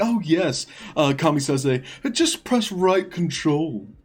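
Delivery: mock offhand, breezy, nonchalant tone. Retelling how another person answered a question: imitating a nonchalant reply. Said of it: "it just nonchalantly is like".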